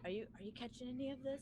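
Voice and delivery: half-whisper. During the game, a player asks a companion aside, half-whispering. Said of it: "I whisper to Aslox".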